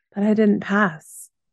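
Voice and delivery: ordinary talk, nothing marked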